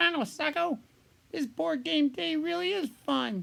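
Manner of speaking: sock puppet voice. A sock puppet playing battleship talks to sacco, in a sock puppet voice. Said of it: "Sock puppets playing battleship, sock puppet talk".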